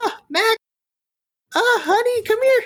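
very high-pitched, excited, eager calling out. Mrs. Yu shuffles over to greet Mac as he walks in, excited Mrs. Yu voice. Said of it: "Mrs. Yu excitedly shuffles her way over".

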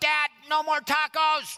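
put-on tiny little girl voice, very high. A father recalls reading with his daughter and quotes her in her little Bella voice. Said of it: "in her little Bella voice".

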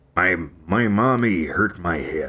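deep, low pitch, slowly drawn out. Trying out an impression after asking how to do it: Harrison Ford impression. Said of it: "how do you do a Harrison Ford impression?".

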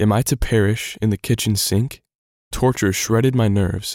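ordinary delivery, nothing marked

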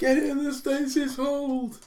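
shouting high and slow. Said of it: "I'm gonna shout".

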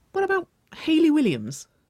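very high, swooping, playful sing-song tease. Replying to a flirtatious compliment from another woman; teasing. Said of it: "she teased, quirking her own eyebrow with a soft smirk".

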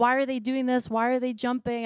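put-on desperate, frantic, disbelieving screaming cry. Retelling a dream where people jump off a cliff: retelling own screaming.

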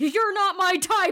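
shrill, very high-pitched in-character shout. Swinging an axe down at a dwarf, the character yells. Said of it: "I yell as I swing my axe".

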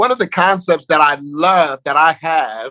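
ordinary talk, nothing marked

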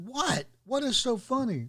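very high, put-on upset outburst. Speaker retells the contractor getting upset at the laughing room: retelling an upset contractor. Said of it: "finally he got so upset".

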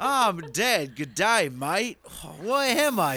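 put-on Australian accent. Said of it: "Are you doing Australian Jesus again?".

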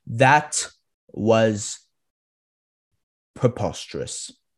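harsh, severe delivery, done badly. Giving a harsher rating: bad Simon Cowell impression. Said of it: "I don't really have a good Simon Cowell impression".

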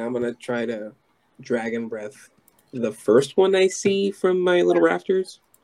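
ordinary talk, nothing marked

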